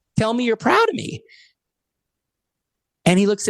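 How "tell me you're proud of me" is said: imitated hyperventilating, sobbing cry, higher pitched. Retelling pleading with a father as a crying kid: imitating a hyperventilating cry. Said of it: "one of those hyperventilating cries when you're young".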